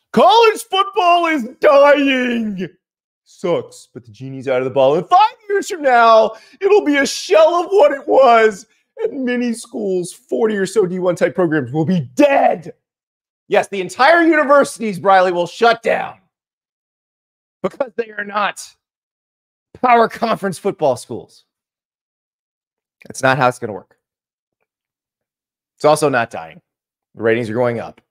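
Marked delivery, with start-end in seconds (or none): 0.2-12.8 dramatic delivery. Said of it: "probably do the dramatic voice 'cause Briley's being very dramatic".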